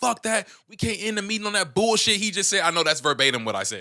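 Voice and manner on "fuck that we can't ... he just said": high, raised, top-of-the-lungs yell. Retelling own outburst when a meeting was about to end, retelling a yell at top of lungs. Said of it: "I'm yelling, bro, like top of my lungs".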